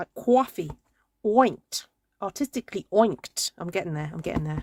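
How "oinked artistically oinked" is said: put-on New York accent, "inked" said as "oinked". Speaker practicing the New York vowel on a live stream: New York accent. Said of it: "There's a special way of doing that vowel".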